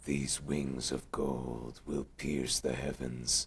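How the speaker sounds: deep, weird, low hybrid creature voice. Asked to perform a Noctis-Bahamut hybrid voice: Bahamut voice. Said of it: "weird Noctis hybrid of Bahamut".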